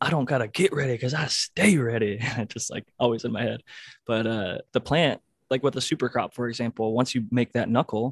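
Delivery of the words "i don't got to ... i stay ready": put-on intense sideline coach yelling, delivered lightly. Recalling what football coaches yelled at them, the speaker is imitating a coach yelling. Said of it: "I've heard like football coaches yell that at me".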